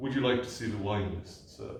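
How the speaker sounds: snooty, superior, condescending posh voice. Retelling how a waiter offers the wine list, mock-condescending waiter voice. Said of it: "say in a condescending voice".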